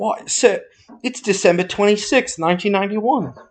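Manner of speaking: put-on cockney child voice. Retelling a movie scene, voicing a little boy: Cockney child voice. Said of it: "He's a little Cockney child".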